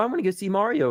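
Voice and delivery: put-on high, childlike little kid voice. Imitating how kids will react to the movie: imitating the kids. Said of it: "All the kids, they're gonna go".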